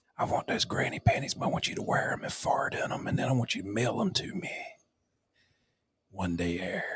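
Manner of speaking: soft, creepy, leering pervy whisper.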